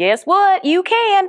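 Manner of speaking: sudden, strong, very high Southern drawl. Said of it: "I got really Southern all of a sudden".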